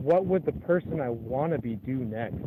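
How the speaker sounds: plain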